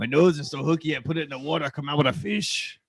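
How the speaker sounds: put-on pirate voice. Telling a joke to the others: pirate voice. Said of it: "You did pirate voice".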